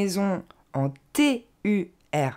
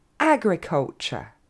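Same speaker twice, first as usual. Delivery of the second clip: agriculture with stress on the first syllable A; 2 semitones lower than usual. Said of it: "l'accent tombe sur le A".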